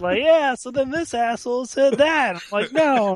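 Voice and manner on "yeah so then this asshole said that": put-on high kid voice hollering with no volume control. Retelling how a kid yells across the dinner table, imitate the kid yelling. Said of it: "He's just yelling".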